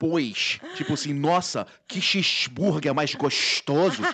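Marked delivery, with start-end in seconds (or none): 1.1-4.0 fake carioca accent, S pronounced as SH. Speaker demonstrating the habit of swapping S for SH, in put-on carioca accent. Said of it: "trocar o S pelo X".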